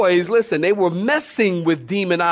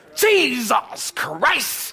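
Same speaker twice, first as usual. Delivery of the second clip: mock scornful, disdainful, pitched-up curse; 5 semitones higher than usual. Describing how people say it after stubbing a toe, mock-disdainful. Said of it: "they even say it with that disdain almost".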